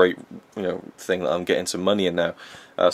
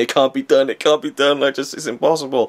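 wound up, pitched up, frustrated, almost crying; 7 semitones higher, 4 dB louder than usual. Retelling own childhood frustration at a video game: imitating being near tears. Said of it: "wound up by games and just be, like, near tears".

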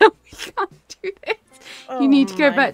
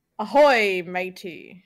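talking like a pirate; 4 semitones lower than usual. Asking another player to talk like a pirate, showing how in a pirate voice. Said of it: "Can you talk like a pirate?".

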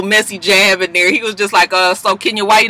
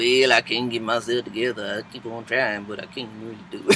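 very soft mumble under the breath; 11 semitones lower, 12 dB quieter than usual. Retelling what Candy said at a dinner: Candy mumbling. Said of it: "Candy over there mumbling".

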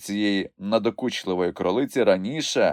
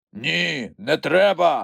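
rough, growling, creaky voice; 7 semitones higher, 3 dB louder than usual. Narrator reads one character's reply to another in a story, growled. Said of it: "загарчав Грампус".

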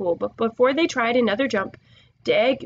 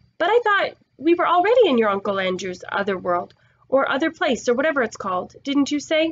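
ordinary delivery, nothing marked

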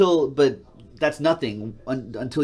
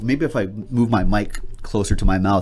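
ordinary talk, nothing marked

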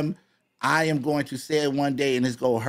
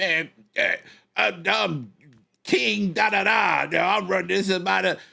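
high, boastful show-off voice. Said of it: "You can't be like".

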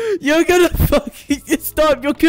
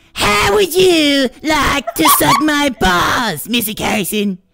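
put-on animated kid character voice. Asked for an impression, doing Cartman from South Park for a listener. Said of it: "I can do Cartman from South Park".

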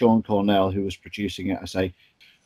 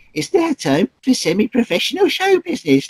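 squeaky, high put-on voice, higher and louder; 4 dB louder than usual. Retelling showing Joe Pasquale an approximation of his voice: Joe Pasquale voice.

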